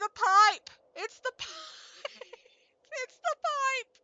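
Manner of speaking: very high voice, words breaking into laughter. While a character cries on screen, the speaker keeps laughing while talking. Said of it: "I'm laughing while Klonoa's crying".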